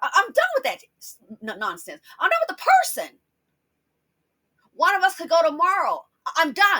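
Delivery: agitated, stumbling speech. Talking about a family member they are done with, getting upset. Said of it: "I'm getting upset now thinking about it".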